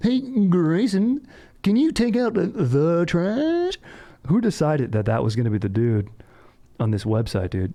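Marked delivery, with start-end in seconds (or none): 0.0-3.8 very high, very slow, drawn-out cartoon dad voice. Mocking a voice clip, the speaker does a cartoonish voice. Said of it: "sounds like he just stepped out of a freaking cartoon".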